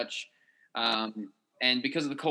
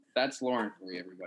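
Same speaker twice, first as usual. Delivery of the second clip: usual speaking voice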